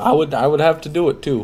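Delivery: high voice breaking and cracking. Discussing a video game playthrough, voice cracking. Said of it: "Sorry about the voice crack".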